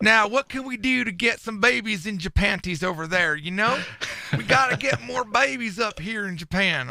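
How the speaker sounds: drawling Southern US accent. Joking about boosting birth rates in japan: southern accent. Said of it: "I don't know why I got a southern accent".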